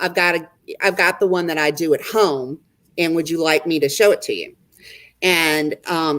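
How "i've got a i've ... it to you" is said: plain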